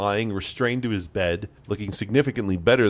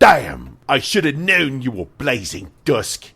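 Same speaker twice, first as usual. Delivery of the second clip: bad put-on Cockney accent, louder; 5 semitones higher, 7 dB louder than usual. Narrator voicing the captain who recognizes the player: bad Cockney accent. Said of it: "It's shit Cockney coming from me".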